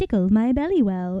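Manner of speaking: small put-on cutesy toy voice. Describing a creature toy to listeners, in a very little toy voice. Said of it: "kind of voice".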